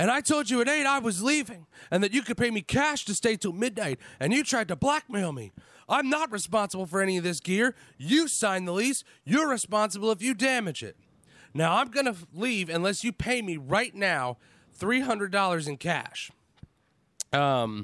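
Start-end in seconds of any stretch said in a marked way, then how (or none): 0.0-16.3 mock yelling, higher. Retelling shouting demands at a man at a party: retelling a shout. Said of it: "proceed to shout at him".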